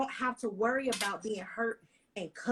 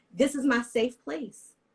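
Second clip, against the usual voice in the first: near tears, holding back crying; 2 semitones higher than usual. Speaking of a spouse and a honeymoon, the speaker is about to cry. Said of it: "I'm about to cry, I'm sorry".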